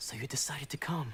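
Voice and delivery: hushed, quiet whisper. Greeting a visitor who has just arrived, after a hush: whispering. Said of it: "Why are we whispering?".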